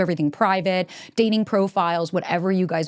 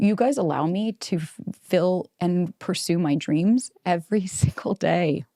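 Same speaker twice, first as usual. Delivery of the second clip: choked-up voice, on the verge of tears. Podcast host thanking listeners, on the verge of tears. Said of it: "I'm gonna cry".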